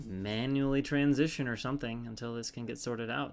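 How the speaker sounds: usual speaking voice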